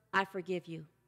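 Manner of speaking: hushed, quiet half-whisper with no voice. Leading a guided meditation, modeling the words to say: half-whispering. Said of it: "I want you to whisper".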